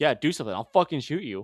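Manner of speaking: put-on smug, smirking, taunting tone. Retelling a guard's words to a ticketed man: imitating a smirking threat. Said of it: "a smirk of".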